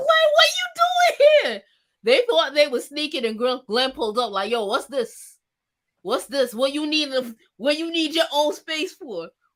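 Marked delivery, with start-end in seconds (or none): 0.0-1.6 mock scream, much higher and louder. Speaker retelling a story, imitating Marie screaming at Glenn. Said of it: "Marie starts screaming".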